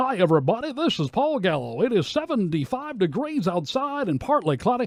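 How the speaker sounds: put-on high, old-time radio carnival-barker hard-sell announcer. Criticizing an unnatural on-air style, the speaker demonstrates it: carnival-barker announcer voice. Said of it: "it's a carnival barker".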